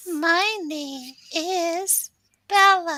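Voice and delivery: high, loud character voice, words stretched out. Demonstrating an app where clicking Bella makes her talk: Bella character voice. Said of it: "That's you?".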